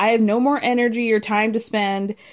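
plain

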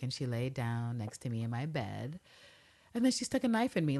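low, hushed voice dropped right down. Retelling a woman's account of coming to her apartment in Paris: dropped voice. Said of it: "she drops her voice".

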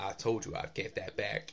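put-on accent from Alabama. Quoting a line from a movie scene in conversation, Nicolas Cage Alabama accent. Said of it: "Was my Alabama accent better than Nick Cage's?".

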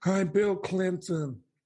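put-on voice pushed very high. Reading about the Clinton administration, breaking into a Bill Clinton impression. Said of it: "It's a great impression".

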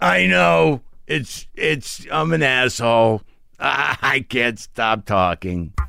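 mock loud, slurring drunken self-pitying voice. Acting out a drunk answering an insult: imitating a loud self-pitying drunk. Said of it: "a loud, self-pitying drunk".

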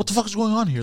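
put-on furious rage yell, pitched way up. Retelling confronting a tow truck driver: retelling a rage outburst. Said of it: "in rage mode".

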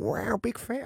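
relaxed drawling put-on voice. Acting out a comedy club meeting with Louis C.K.: Owen Wilson impression. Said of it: "here's Owen Wilson at Dangerfield".

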